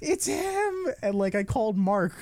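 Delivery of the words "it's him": play-acted, very high squealed scream. Recounting throwing the book down on reading Lux Monteri: retelling a scream. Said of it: "I screamed so".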